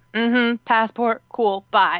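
slow, surly, grudging, dismissive-sounding delivery. Describing how a surly customs officer usually acts: imitating a surly customs officer. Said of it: "if they were surly".

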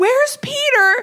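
squeaky alarmed voice. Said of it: "And then I'm like".

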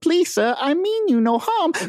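put-on tiny little boy begging, very high pleading voice. Describing a character caught in a fight, doing the pleading little boy voice. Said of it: "all you hear is that little boy sound of".

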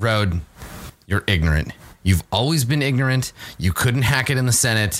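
furious, angry, mad outburst. After a failed persuasion check she stands up and speaks to rode, angry. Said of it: "she's so mad. She gets mad".

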